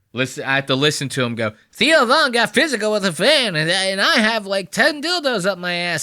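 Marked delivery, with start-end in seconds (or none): 1.8-6.1 sneering, mocking voice, high pitch. Act out the one you have to listen to, in a high-pitched Joke World impression. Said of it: "this is why I talk with such a high pitched voice".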